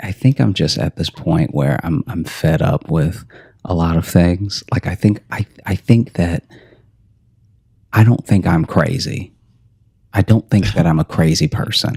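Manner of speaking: speaking in a whisper. Telling a co-host about being fed up: speaking in a whisper. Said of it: "saying this in kind of a whisper".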